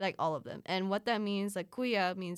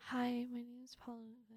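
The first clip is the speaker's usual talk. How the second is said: very quiet, soft, high shy mumble; 5 semitones higher, 10 dB quieter than usual. Retelling how they introduced themselves when shy: imitating own shy muttering. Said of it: "I would just kinda mutter into the void".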